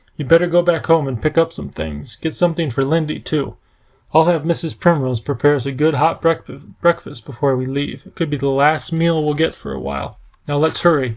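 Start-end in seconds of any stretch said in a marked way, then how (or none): none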